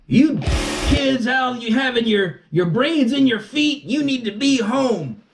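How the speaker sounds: very high, shrill, furious scolding yell. Retelling what a guy in a parking lot yelled at them; retelling a yell. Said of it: "the guy yells out".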